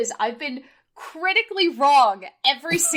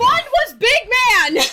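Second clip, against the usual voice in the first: very high, shrill, slow drawn-out yell; 9 semitones higher, 7 dB louder than usual. Correcting another speaker about which team won: yelling. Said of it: "please stop yelling at me".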